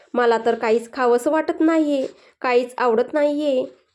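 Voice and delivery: ordinary delivery, nothing marked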